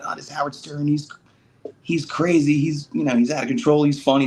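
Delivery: high excited voice.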